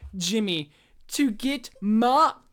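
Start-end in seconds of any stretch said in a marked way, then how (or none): 1.1-2.3 loud voice crack, breaking apart in the middle of the word. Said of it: "Here comes the cutest voice crack ever".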